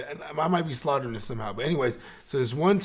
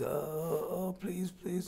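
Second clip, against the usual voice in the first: put-on crying voice, much higher; 5 semitones higher, 8 dB quieter than usual. Retelling how a captured man begged in the car: imitating crying begging. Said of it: "he's crying".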